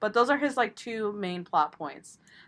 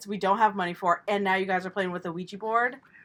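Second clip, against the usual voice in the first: ordinary talk, nothing marked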